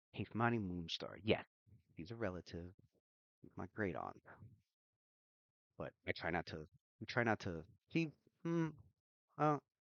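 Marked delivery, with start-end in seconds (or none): 0.2-4.2 soft, hushed, secretive, confiding half-whisper. Voicing a character who looks around, then half-whispering in character. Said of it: "kinda, like, whispers to you".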